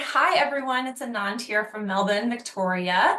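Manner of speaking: ordinary talk, nothing marked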